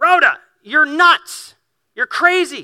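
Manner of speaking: very high, very loud, shrill yell. Retelling the story where someone yells at Rhoda; retelling a yell. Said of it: "somebody yells".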